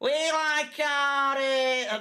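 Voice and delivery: high Liverpool accent, drawn-out "it". After being asked what accent that was meant to be, in a Liverpudlian accent. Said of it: "I'm going a bit fucking uh, Liverpudlian there".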